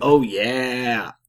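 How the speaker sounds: mascot-style "oh yeah", "yeah" long and drawn out. Co-host describing a movie character crashing through things, Kool-Aid Man 'Oh yeah'. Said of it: "my oh yeah sounded like the Kool-Aid man".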